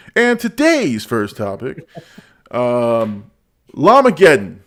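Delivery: very slow, drawn-out "um", swooping pitch. Introducing the first topic of a stream: John Campea impression. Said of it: "my best, uh, John Campea impression".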